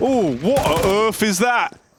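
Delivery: put-on British accent. Showing how to do a British accent: British accent. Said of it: "say "what on earth" in a British accent".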